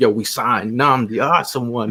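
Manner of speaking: plain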